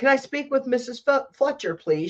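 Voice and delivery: sharp, tart tone. Retelling a hospital caller asking for her: imitating a tart voice. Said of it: "she says with tartness".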